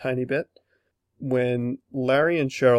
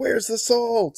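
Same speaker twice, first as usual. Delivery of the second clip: put-on squealing, very high-pitched, shrill yell; 10 semitones higher than usual. Describing a favorite scene, retelling Larry's yell. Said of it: "he yells".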